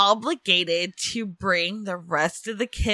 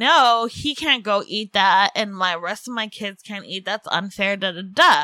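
usual speaking voice

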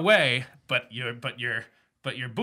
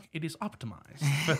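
sexy woman's voice in a commercial style; 6 dB quieter than usual. Explaining the accent by imitating a woman in a sex tech commercial. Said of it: "a woman who's like".

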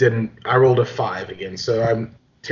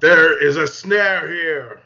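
calling out, pitched high; 6 semitones higher than usual. Warning the party in character about a snare trap: yelling. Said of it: "And I yell out".

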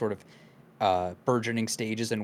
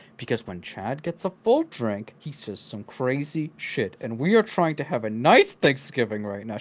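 put-on speech through clenched teeth; 2 semitones higher, 4 dB louder than usual. Retelling how Mom handles Chad at Thanksgiving, imitating her speaking through her teeth. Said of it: "She says all through her teeth".

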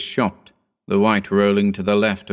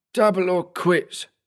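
very high, rasping voice; 10 semitones higher than usual. Adenoids grabs Graham's forearm at the gambling table and speaks, in a raspy voice. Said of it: "he rasped".

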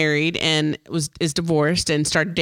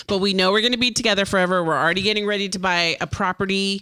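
normal talking voice

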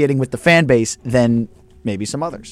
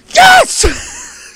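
shrill, very high, loud squealing scream on "yes"; 7 dB louder than usual. Retelling a broadcaster screaming in the mic during a play: imitating Ruben Amaro Jr.'s high-pitched scream. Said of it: "screams in the mic ... so high-pitched".

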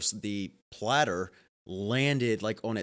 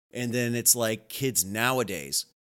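ordinary talk

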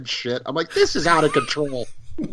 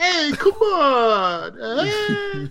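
put-on high New York accent, drawn-out "on"; 13 semitones higher than usual. Mocking a cartoon turtle's dialogue: Raphael's put-on New York accent. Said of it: "really put on New York accent".

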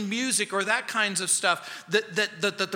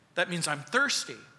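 ordinary talk

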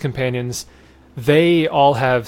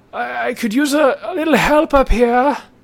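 shouting from far away, higher pitch; 10 semitones higher than usual. Voicing a distant figure shouting to the players: distant shout. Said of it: "it's shouting out to you".

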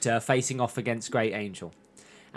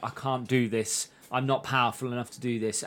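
put-on tearful crying voice; 4 dB quieter than usual. Retelling a scene where a character panics and pleads: imitating a character crying. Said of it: "Kwan panics and she starts crying and she's like".

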